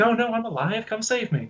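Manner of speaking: very high, faked woman's voice. Retelling a movie scene where a dark being mimics the wife: imitating the wife's voice. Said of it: "putting on his wife's voice".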